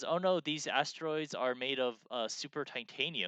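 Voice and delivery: ordinary talk, nothing marked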